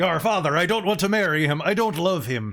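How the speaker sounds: booming pirate-speak voice. Voicing a princess in the same pirate voice. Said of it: "doing this voice for a princess".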